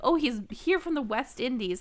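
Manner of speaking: plain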